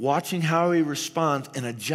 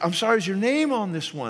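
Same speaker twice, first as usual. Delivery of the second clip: put-on snarky tone; 4 semitones higher than usual. Confessing what the speaker once said to someone over a bike, retelling a snarky remark. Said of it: "I might have said in a real snarky way".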